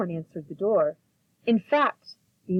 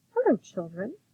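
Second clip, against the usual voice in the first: sweetly spoken, honeyed, storybook-style voice; 3 semitones higher than usual. Reading a story aloud, someone greets the worried children in a sweet voice. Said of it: "someone said in a sweet voice".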